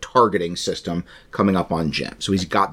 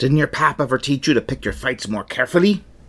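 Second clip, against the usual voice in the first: higher, hammed-up pirate voice. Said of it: "I'm gonna do a pirate voice".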